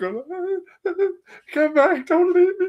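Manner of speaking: bawling, sobbing, very high wailing voice. Retelling a phone call as a kid, acting out their own sobbing. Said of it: "So I start bawling my eyes out".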